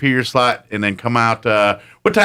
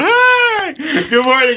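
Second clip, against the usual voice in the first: put-on sudden chirpy, cheery tone, higher pitch. Retelling switching from ranting to a greeting: imitating own sudden cheery greeting. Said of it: "I was ranting, complaining, and I just go".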